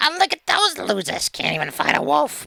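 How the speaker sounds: very high, rough, creaky goblin cackle. Game master voicing a goblin taunting the party from the dark, laughing goblin voice. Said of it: "like a laughing voice going".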